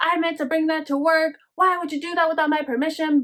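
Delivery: acted, angry, loud, high yelling at full voice. Retelling how the mom yelled at the dad, imitating someone yelling. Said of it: "she was yelling at him, like, in a really loud voice".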